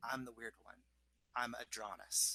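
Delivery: slight whisper. Voicing a woman introducing herself, whispering a little. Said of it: "she kind of whispers a little bit".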